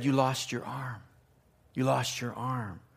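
hushed quiet voice.

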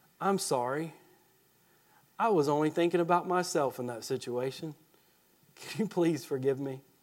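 soft, low sarcastic apologetic tone.

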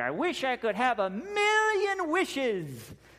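very high, swooping cartoon duck voice. Retelling what a duck nephew says after rubbing the lamp, in a duck accent. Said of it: "I can't get the duck accent quite right".

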